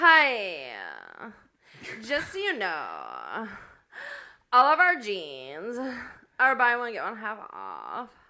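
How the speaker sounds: very slow, fried, creaky, dragged voice. Retelling a tall blonde in a jeans shop offering a deal, vocal fry. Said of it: "it's vocal fry".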